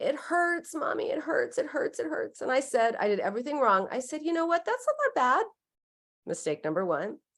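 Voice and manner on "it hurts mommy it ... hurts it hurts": mock teary, high-pitched little girl sobbing. A mother retells her daughter's words after a skinned knee, imitating a crying child. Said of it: "she's crying, crying, crying".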